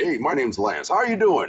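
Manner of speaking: swooping, animated ad voice-over announcer voice. Retelling how a voiceover announcer sounded: imitating Lance's voice. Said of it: "he sounded like this".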